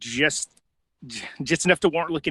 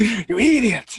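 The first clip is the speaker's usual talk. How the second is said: shrill, loud cartoon-character outburst; 8 semitones higher, 6 dB louder than usual. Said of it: "I'm sure I sounded very much like Ren from Ren and Stimpy".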